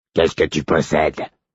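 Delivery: low, hoarse, raspy, hesitant, halting monotone. Narrating one of the two strangers answering the narrator's question: raspy hesitant voice. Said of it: "Il avait la voix rauque et hésitante".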